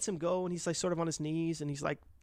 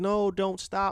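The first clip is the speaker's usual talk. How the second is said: put-on screaming, desperate and strained; 3 semitones higher, 5 dB louder than usual. Retelling a movie scene where the wife cries out to her husband: imitating a woman screaming. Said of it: "screaming to her husband".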